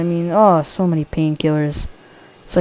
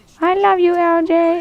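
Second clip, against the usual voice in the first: very high, drawn-out, slow cute voice; 12 semitones higher than usual. Retelling what a twelve-year-old kid said, imitating Gold Spy's cute voice. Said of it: "he says it in the cutest voice".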